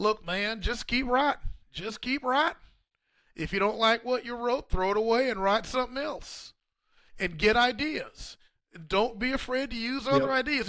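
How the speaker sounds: put-on Oklahoma accent. Retelling advice from composer James Barnes in his Oklahoma accent. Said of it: "that Oklahoma accent of his".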